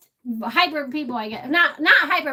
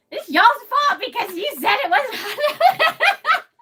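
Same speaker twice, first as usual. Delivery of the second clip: put-on very high-pitched, blaming, accusing holler; 11 semitones higher, 4 dB louder than usual. Recounting eating the Raging Bull on video, retelling a yell at everybody. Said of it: "I'm yelling at Uncle Bull Cow".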